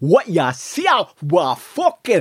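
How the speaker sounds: Geordie accent from north-east England. The speaker explains the Newcastle accent as surviving the cold: Newcastle accent. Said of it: "The Newcastle accent".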